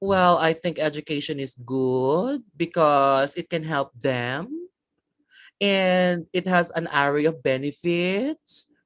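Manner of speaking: slow, tentative, unsure, hesitant delivery. Giving feedback on speaking answers, demonstrating a hesitant, unsure answer. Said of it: "you sound unsure about the things that you're saying".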